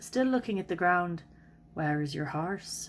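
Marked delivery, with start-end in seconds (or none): 1.7-2.9 low, quiet, subdued murmur. After a moment, Sean speaks to the narrator beside the stallion, in a low voice. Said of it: "Sean says in a low voice".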